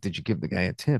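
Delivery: quiet, hushed half-whisper under the breath. Retelling a question half-whispered to a mother at the airport: retelling a half-whisper. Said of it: "And I whispered to her".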